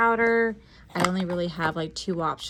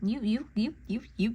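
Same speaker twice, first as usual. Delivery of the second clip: stuttering, stammering with repeated words; 3 semitones higher, 4 dB quieter than usual. Choosing a makeup palette to show viewers: stuttering. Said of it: "Clearly, I'm stuttering".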